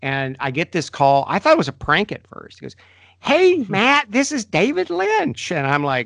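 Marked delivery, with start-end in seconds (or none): 3.2-5.5 very high-pitched, friendly voice. Retelling a first phone call from David Lynch: high-pitched David Lynch impression. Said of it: "he has a really high-pitched voice".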